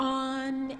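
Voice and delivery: flat, level tone held on on. Teaching the second character's tone: straight level tone on 'on'. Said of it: "that is the straight tone".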